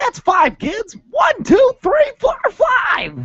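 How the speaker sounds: puppet voice, way up high. Mimicking the other speaker's count in a Muppet voice. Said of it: "you have to mimic me in Muppet voice".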